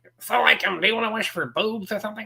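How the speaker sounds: very high, squeaky cartoon-character voice. Imagining a cartoon teen as the genie, Beavis voice. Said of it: "what if Beavis from Beavis and Butthead".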